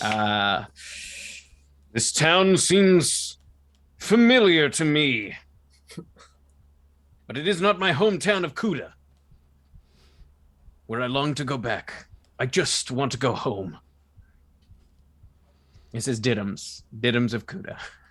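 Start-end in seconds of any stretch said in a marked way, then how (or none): 1.9-13.8 broad, big cartoon superhero voice. Voicing a character who longs to go home: Zap Brannigan voice. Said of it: "that's Zap Brannigan".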